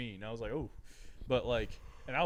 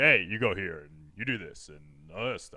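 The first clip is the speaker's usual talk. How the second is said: loud, booming, deep coach voice; 6 semitones lower, 9 dB louder than usual. Speaker recalls one of their coaches who talked like this: deep coach voice. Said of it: "he had a really deep voice. He talked like this".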